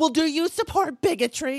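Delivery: accusing yell, screaming. Retelling how everyone reacts to their view, mimicking people screaming accusations. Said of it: "everyone's screaming at me like".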